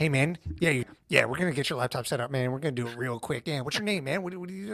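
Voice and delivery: hyper, way-too-eager, fast overexcited rattle. Retelling an IT guy rushing in to set up a laptop: imitating an overexcited coworker. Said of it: "way too excited for, like, six A M".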